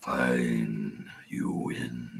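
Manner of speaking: growled delivery. Voicing a defeated Dragonborn throwing down his sword: growling. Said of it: "the Dragonborn growls".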